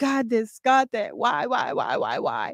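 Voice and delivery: high, sobbing, tearful pleading voice. Retelling crying hard while questioning god: imitating own crying plea. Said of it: "I was crying so hard".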